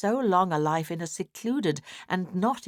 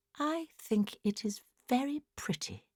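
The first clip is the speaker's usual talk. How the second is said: soft, wistful, plaintive half-whisper; 7 semitones higher, 5 dB quieter than usual. Reading a story aloud, voicing a character's quiet reply: soft plaintive near-half-whisper. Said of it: "with a soft plaintiveness in her voice, and almost in a whisper".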